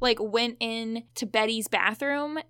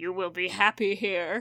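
put-on ominous, threatening, low menacing voice; 4 semitones lower than usual. Speaker retells a man's line after a huge pause, imitating a menacing tone. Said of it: "And really menacingly".

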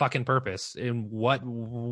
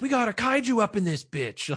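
put-on, very high-pitched shrieking, screaming yell; 12 semitones higher than usual. Picturing Steve Agee reacting to a giant starfish villain: Steve Agee screaming. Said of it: "that's fucking Steve Agee screaming".

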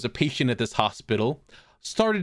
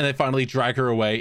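ordinary talk, nothing marked

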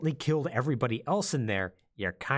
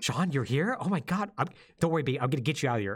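play-acted, heartfelt, very emotional pleading delivery. Retelling a story scene where a parent finds their son, imitating an emotional voice actress. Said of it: "the voice actress is like really like emotional".

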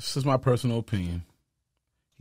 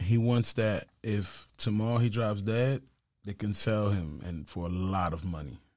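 very sarcastic, low, soft and dry. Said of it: "I'm being very sarcastic right now".

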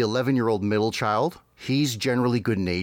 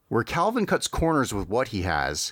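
ordinary talk, nothing marked

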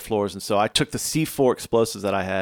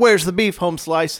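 put-on loud, pitched-up yell; 9 semitones higher, 5 dB louder than usual. Retelling a story of firing shots, retelling own past yell. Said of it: "I yelled".

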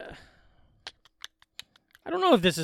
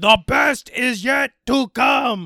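slow loud yell. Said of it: "he's yelling".

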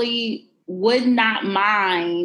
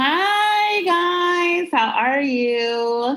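very slow, nasal voice with long drawn-out "hi"; 8 semitones higher than usual. Greeting the listeners at the start of an episode: nasal voice. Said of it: "You sounded so nasally with that one".

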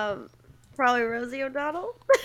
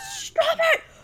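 acted-out scream, higher pitch. Retelling screaming at siblings who teased: imitating own past screaming. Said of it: "I'd scream at them".

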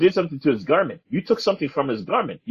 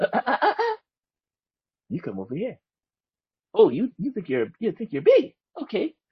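put-on high, swooping sleepwalker character voice; 6 semitones higher than usual. Retelling how the sleepwalker confronts someone: put-on sleepwalker voice. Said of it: "Sleepwalker's like".

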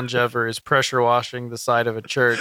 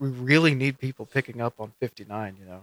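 hushed, half-whispered stage whisper; 4 dB quieter than usual. Retelling what one guy in a meeting said: imitating someone half-whispering.

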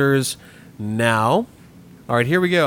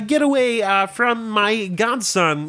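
higher-pitched cartoon frog character voice; 9 semitones higher than usual. Doing a voice for others to guess in a quiz: Kermit the Frog voice. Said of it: "That was Kermit".

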